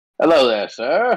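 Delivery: stiff, officious, official-sounding gnome voice. Narrating the scene, the speaker voices an official-looking gnome approaching a traveler: official-sounding gnome voice. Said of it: "this official-looking gnome".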